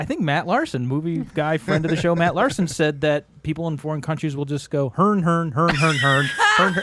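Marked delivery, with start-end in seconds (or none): 4.9-6.8 gibberish "hern" repeated over and over. Retelling how people abroad imitate Americans, mock American gibberish. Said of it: "that's their impression of Americans".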